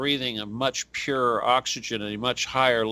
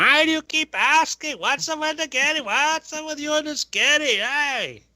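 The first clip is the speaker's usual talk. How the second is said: put-on shrill, very high, slow, drawn-out Philadelphia accent. Picturing the ex complaining about repeated questions: imitating the ex. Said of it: "I could just hear".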